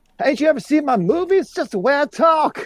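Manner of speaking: very high-pitched, full-on shout on every word. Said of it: ""Why are you shouting?"".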